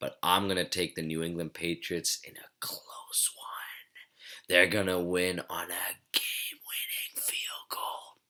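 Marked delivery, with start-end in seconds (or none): 2.2-8.0 soft, breathy, hushed whisper throughout. Making late-night football picks, the speaker is whispering. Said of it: "I'm whispering".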